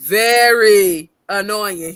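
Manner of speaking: "very annoying" drawn out, slow, loud, emphatic. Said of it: "who just said very annoying?".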